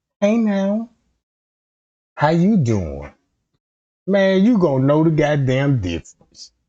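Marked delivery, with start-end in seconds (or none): 0.2-3.1 clumsy, swooping, failed put-on female voice. Speaker acts out approaching a young man at a bar, in an attempted woman's voice. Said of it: "I can't even talk like a female".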